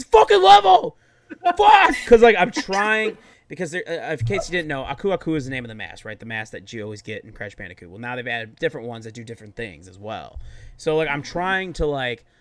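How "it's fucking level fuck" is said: shrill, full-volume, very high-pitched yell. Retelling yelling while playing a game and watching the Bears: imitating own past yelling. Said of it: ""What are you yelling at?"".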